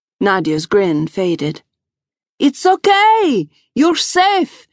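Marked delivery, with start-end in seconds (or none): 2.4-4.5 very high reassuring shout, okay drawn out. Reading a woman calling to a panicked man running for the exit, shouting. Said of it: "she shouted".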